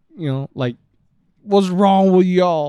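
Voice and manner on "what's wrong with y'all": very loud, high-pitched yelling. Retelling a shop owner whose shop burned down: imitating someone yelling. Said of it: "just yelling to no one in particular".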